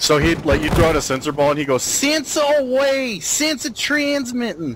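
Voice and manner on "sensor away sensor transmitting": put-on New Jersey accent, very high pitch. Gamer recalling a Bad Company character throwing sensor darts, Jersey guy accent. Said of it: "sounded like a dude from Jersey".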